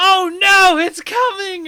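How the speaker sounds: shrill, very high, loud anime schoolgirl voice. Retelling a teammate's line during a fight: imitating an anime schoolgirl voice. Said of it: "He's got that anime schoolgirl voice".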